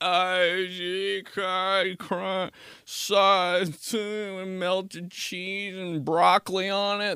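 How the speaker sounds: mock drunken, very slow, high, drawn-out voice. Retelling customers ordering in drive-thru lines: imitating a drunk person. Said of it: "People have just been so drunk".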